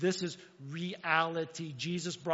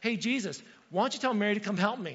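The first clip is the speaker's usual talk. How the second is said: miffed, steamed, put-out, high, raised voice; 5 semitones higher, 5 dB louder than usual. Retelling a Bible story, a woman complaining to Jesus about Mary, mock-miffed complaint. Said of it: "And she's all like miffed".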